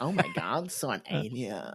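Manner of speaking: slow fake creaky vocal fry. Joking about how a character should sound with added vocal fry: put-on vocal fry. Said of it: "give him vocal fries as well".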